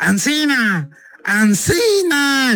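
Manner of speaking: put-on high, drawn-out yelled call in children's voices.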